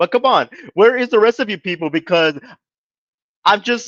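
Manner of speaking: high, weepy voice talking through tears. Speaker, just left by his girlfriend, calls out to others, crying while talking. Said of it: "if you could tell by the tone of my voice".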